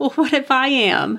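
high-pitched, tearful laugh through tears. A woman answers her partner's teasing, laughing through tears. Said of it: "she laughed, wiping her eyes".

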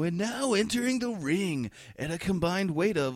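ring announcer voice. Speaker retells announcing his parents coming in, doing a dj voice. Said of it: "start doing my best DJ voice".

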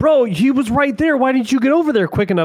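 imitated yelling. Retelling how he gets yelled at while playing Warzone, retelling a yell. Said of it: "you're yelling at me at 42 going".

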